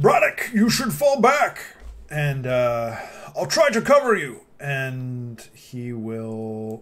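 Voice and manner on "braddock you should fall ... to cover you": put-on animated, high, loud shout. Playing a character who tells a companion to fall back: shouting in character. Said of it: "he just shouts".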